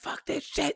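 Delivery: furious, angry outburst in a whisper. Retelling a phone call to a friend while late: retelling a furious rant. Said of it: "I'm going off".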